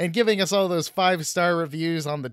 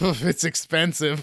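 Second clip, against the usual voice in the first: put-on sarcastic voice with nervous laugh. Retelling a cashier's answer about moving to chicago: imitating a nervous, sarcastic reply. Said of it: "laughed nervously slash, like, sarcastically".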